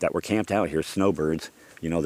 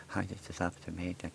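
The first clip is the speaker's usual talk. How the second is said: very quiet, barely audible muttered mumble; 14 dB quieter than usual. Retelling a voicemail from an officer: imitating Officer May mumbling quietly. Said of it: "So fucking quiet, I can barely hear him".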